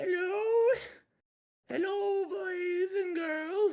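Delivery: put-on old woman voice, pitched way up. Narrator voicing an old lady who greets the approaching travelers, old lady voice. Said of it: "the old lady looks up at you".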